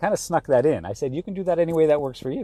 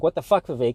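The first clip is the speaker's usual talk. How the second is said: harsh, critical, scolding tone. Showing the tone of his inner voice criticizing himself: harsh self-critical tone. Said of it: "this is my tone ... this is how I sound in my head when I'm criticizing myself".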